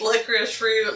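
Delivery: normal talking voice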